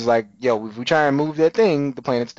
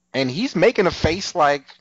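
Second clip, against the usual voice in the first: ordinary delivery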